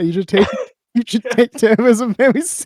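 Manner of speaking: laughing through the words, can't keep straight face. Trying to say a serious line while recording: laughing while talking. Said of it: "He can't even say it with a straight face".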